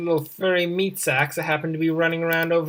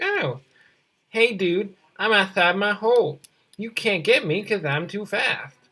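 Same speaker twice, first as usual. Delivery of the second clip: cocky, smug, taunting, bragging little rabbit voice; 3 semitones higher than usual. While setting rabbit traps, voicing the rabbits outside their hole, imitating smug rabbits. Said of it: "Those smug rabbits being like".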